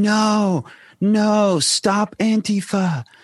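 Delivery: high-pitched, loud yelling. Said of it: "And she's yelling".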